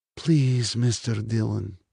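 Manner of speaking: softly spoken, quiet and gentle voice. The Russian, gripping Dylan's wrist, speaks to him in a soft voice. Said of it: "said the Russian in a soft voice".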